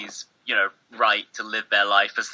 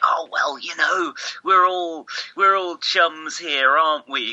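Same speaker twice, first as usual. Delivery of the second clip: mock matey, chummy host voice, pitched up; 6 semitones higher than usual. Describing how a podcast host talks to guests: imitating a host's chummy tone. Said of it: "he sort of speaks in this very".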